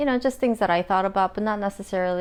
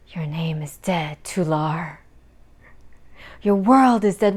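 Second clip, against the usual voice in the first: mock taunting delivery, lower; 3 semitones lower, 4 dB louder than usual. Reenacting how he spoke to another man to deliberately anger him, mock-taunting delivery. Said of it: "Why why was he talking like this?".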